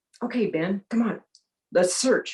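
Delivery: mock mildly firm, slightly stern, commanding tone. Retelling calling the dog Ben to start a search, retelling a slightly stern command. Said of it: "kind of a little bit of a stern voice".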